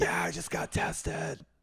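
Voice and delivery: horribly hoarse, creaky rasp. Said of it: "had that horrifically hoarse voice".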